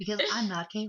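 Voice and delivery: mock silky, sultry bedroom voice. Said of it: "he's trying to use a bedroom voice".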